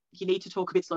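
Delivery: ordinary delivery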